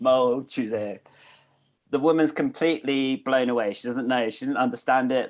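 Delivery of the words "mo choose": put-on Korean spoken with a South London accent. Retelling how a man with a south london accent ordered water in korean, south london accent. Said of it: "he's got a South London accent, so it comes out like mo".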